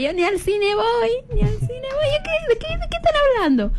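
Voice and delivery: high, confused, bewildered voice.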